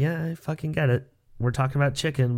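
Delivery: plain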